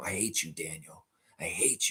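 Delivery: hushed half-whisper, very quiet, close to the ear. Watching a team huddle, talking to a player who can't hear you: half-whispering. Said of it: "I'm whispering in your ear right now".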